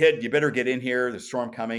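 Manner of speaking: big, loud put-on father voice. Retelling a storm, the speaker imitates his dad calling from the front porch in a big deep voice. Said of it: "He had this big, deep voice".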